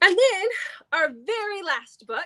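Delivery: yawning while talking. Listing books in a series, yawning mid-sentence. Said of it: "I'm yawning".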